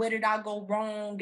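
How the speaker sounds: ordinary delivery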